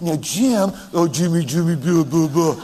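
put-on cooing baby talk. Retelling how Nanette talks to Jim, imitating Nanette's baby talk. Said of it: "Can you imagine Nanette?".

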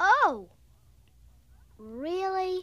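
unenthusiastic, not too excited. Told they'll be home by noon tomorrow, the listener answers: unenthusiastic. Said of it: "You don't sound too excited".

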